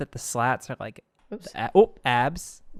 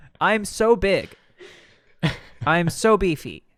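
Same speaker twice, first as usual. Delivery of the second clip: very slow, raised robotic text-to-speech computer voice; 5 semitones higher, 6 dB louder than usual. Playing a beefy Cumberbatch in a joke bit: sounding like Microsoft Sam. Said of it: "He's starting to sound like Microsoft Sam".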